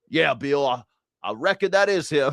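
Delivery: put-on Mississippi drawl. A speaker imagining a Mississippi man answering a question, imitating a Mississippi drawl. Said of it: "Bill's on loan from Mississippi".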